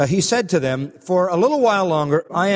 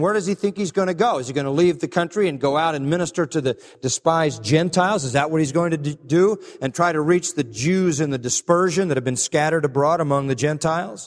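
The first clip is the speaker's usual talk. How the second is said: ordinary talk, nothing marked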